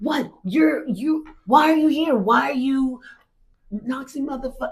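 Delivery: high, screamed yelling. Retelling how a man screams at churchgoers: imitating a man screaming. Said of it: "he screams".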